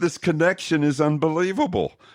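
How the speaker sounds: awed, impressed, voice jumping up high. Reacting to the other speaker's story: voice going up. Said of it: "Did you notice how my voice just went up?".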